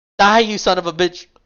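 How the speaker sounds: raw, high, loud shouted battle cry. Voicing a soldier aiming a rifle at an enemy: shouting.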